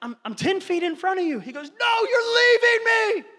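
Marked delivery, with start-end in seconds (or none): 1.7-3.2 put-on near-panicked, high, loud, intense child scream. A dad retelling a kid on a hike calling after him: acting out a kid screaming. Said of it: "He's screaming. He's really intense".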